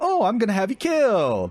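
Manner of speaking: mock-cheerful voice. Acting out what he meant to say in his voicemail, mock-happy voice. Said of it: "in a happy voice".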